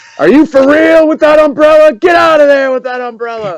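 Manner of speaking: put-on, very high-pitched, outraged screaming. Imitating a caddy screaming at slow golfers ahead: imitating John McEnroe screaming. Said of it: "he would be screaming at the little old ladies".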